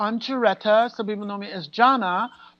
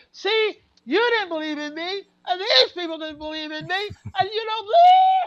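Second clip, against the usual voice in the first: very high, swooping, shrieking scream; 10 semitones higher than usual. Retelling how she screamed at the boyfriend: imitating her own screaming. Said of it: "So I go screaming to the boyfriend".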